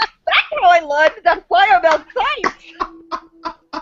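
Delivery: slow speech broken by laughing.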